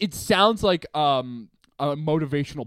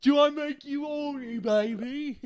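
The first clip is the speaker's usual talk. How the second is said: high, hammed-up, put-on bad Cockney accent. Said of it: "He's trying to do a Cockney accent".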